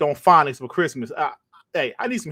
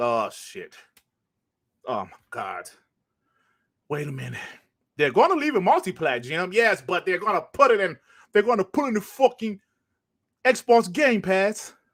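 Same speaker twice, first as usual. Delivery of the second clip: terrible, bad British accent impression, higher; 3 semitones higher than usual. Acting out executives in a conference room: terrible british accent. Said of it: "My British accent is terrible".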